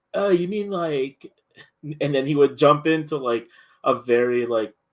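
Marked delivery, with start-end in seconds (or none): 0.1-1.3 full put-on California dude accent. Retelling how an anime-savvy acquaintance talked: imitating a California accent. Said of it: "California accent, dude".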